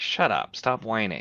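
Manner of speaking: ordinary talk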